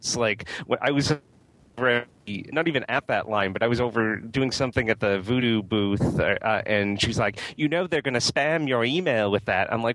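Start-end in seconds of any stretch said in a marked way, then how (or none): 7.6-9.7 put-on British accent. Retelling what a costumed booth actor said while insulting people: imitating a British accent. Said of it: "insulting everyone in, like, a British accent".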